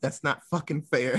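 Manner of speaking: ordinary talk, nothing marked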